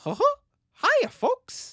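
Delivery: very high-pitched, sing-song voice. Prompted by a comment, the speaker tries a Mickey Mouse impression. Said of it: "my Mickey Mouse impression".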